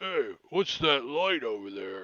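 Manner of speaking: called-out bugbear monster voice in goblin language. Voicing a bugbear that spots a light, speaking Goblinoid. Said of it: "It sounds like it's in Goblinoid".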